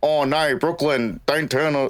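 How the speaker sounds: comically casual, unserious Australian accent. An Australian imagining an Australian character in Jurassic World, unserious Australian accent. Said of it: "our accent is so unserious. Like imagine like".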